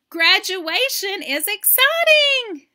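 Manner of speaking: very high, very loud burst of excitement. Teaching exclamation points, reading an example sentence as excited reading. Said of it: "We need to say it with excitement. ... You see how I read that?".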